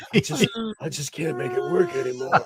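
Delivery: sorrowful, mournful, beaten-down, defeated tone. Imitating someone who is like Mickey Rourke lamenting his body: Mickey Rourke lament. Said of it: "he's like Mickey Rourke in The Wrestler, lamenting the failure of his body".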